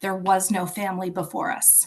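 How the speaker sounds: normal talking voice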